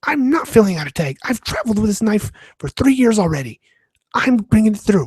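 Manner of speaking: acted, high, irate, pissed-off tone. Retelling an angry traveler's refusal to a security agent: imitating an angry man. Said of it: "clearly pissed off".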